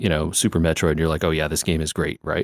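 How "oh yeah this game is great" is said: ordinary talk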